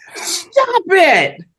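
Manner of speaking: play-acted, high-pitched scream. Retelling what was heard while walking back through a crowd: imitating Angela screaming. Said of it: "all I heard was Angela screaming".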